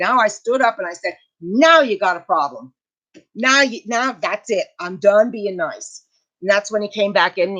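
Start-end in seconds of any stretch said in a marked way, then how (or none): 1.4-6.0 mock fed-up anger, slow and furious. Retelling what they said after standing up to the staff: retelling own furious words. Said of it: "But now I'm furious".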